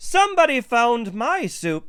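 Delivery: very high, squeaky, sputtering voice. Narrator reading Baby Bear's line after Mama Bear speaks: Baby Bear's high squeaky voice. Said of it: "sputtered Baby Bear in her high, squeaky voice".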